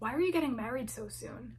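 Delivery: play-acted grave, stern, abruptly changed tone. Retelling a woman's abrupt question after family updates, imitating her serious voice. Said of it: "She said it with such a serious voice".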